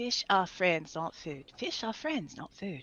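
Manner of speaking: hushed, very quiet put-on Australian accent, under the breath. A mom walking through Publix repeating a movie line, Australian accent. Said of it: "I was actually talking about Australian accents".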